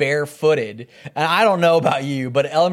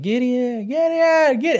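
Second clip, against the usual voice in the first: very slow, high, drawn-out holler, building up; 9 semitones higher than usual. Recounting going around the house trying to find him, retelling hollering for him. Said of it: "Like holler him".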